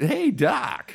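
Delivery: very high, squeaky voice, done badly. Joking about a fired actor, doing a terrible Michael J. Fox impression. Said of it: "my terrible, terrible impression of Michael".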